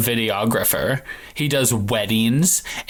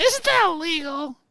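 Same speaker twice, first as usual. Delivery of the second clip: put-on very high, shrill yelling cartoon teen girl voice. Asked whether it is a Hermione voice, doing a Teen Girl Squad voice. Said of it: "me doing my Teen Girl Squad voice".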